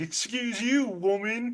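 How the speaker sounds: play-acted spoiled-kid sass, snotty and bratty. Retelling a movie scene, quoting the new arrival: imitating a bratty kid. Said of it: "real bratty kid".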